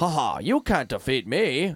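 slow, drawn-out voice like a dubbed robot. Retelling a cartoon scene, imitating its Mark Zuckerberg: robotic dubbed Mark Zuckerberg voice. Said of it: "he was almost this robotic guy that was dubbed over".

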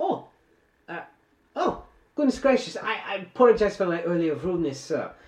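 very high fake German accent. Playing a young german man apologizing to a gentleman, put-on german accent. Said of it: "it is the uh, young German man that you had found on the train ... ja".

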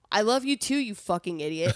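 loud, fed-up, pissed-off, exasperated delivery. Retelling how a partner finally said it, imitating a pissed-off boyfriend. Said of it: "he got so pissed off".

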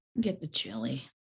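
low, soft, unhappy. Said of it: "You don't sound too happy about that".

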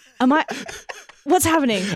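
high, frightened, startled, scared blurt. Retelling own reaction to a sudden noise in headphones: imitating own frightened reaction. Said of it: "that scared the shit out of me".

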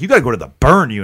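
mock hostile, angry, aggressive security-guard voice. Retelling what the security guard said at the hospital: imitating an angry guard. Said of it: "he was, like, angry about it".

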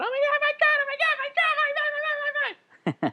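put-on very high, excited babble of little kids' chorus. Retelling how little kids reacted when a ballplayer looked over: imitating crowd of little kids. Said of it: "a thousand little kids come out".

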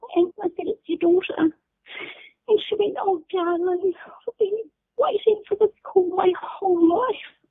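overcome with emotion, voice pitched very high. Recounting the first phone call with her mother, emotional. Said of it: "because I was so emotional, like I am now".

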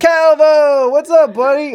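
booming, shrill, loud, high, drawn-out yell. Breaking off a story to greet someone: yelling. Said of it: "I'm, like, yelling into this".

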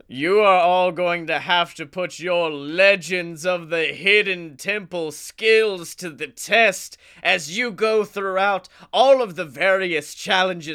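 put-on giant stone god voice. Describing an imagined show as the god Olmec speaks: Olmec voice. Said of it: "Olmec looks upon you all and he goes".

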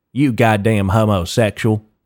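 heaviest, thick, exaggerated put-on country accent. Imagining someone calling you that in a park, in a thick country accent. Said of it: "in the countryest accent of all fucking time".

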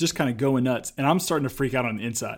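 normal talking voice

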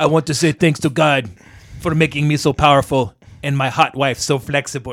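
put-on thick, heavy Bulgarian accent. Retelling a wrestling promo where Miro thanks God: thick Bulgarian accent. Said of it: "with that thick Bulgarian accent".

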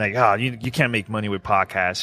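ordinary delivery

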